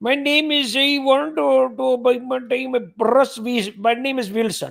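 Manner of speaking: put-on Indian accent. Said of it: "That is the accent, that accent struggle to answer".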